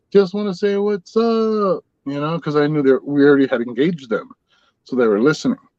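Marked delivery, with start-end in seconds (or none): 0.2-1.9 high, slow, drawn-out calling voice. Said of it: "I yelled out".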